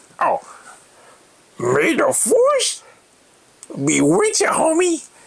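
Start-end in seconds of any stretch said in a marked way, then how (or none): 1.6-5.0 very high, swooping sing-song put-on voice. Asked to say the farewell again in Yoda voice. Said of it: "say it in your Yoda voice".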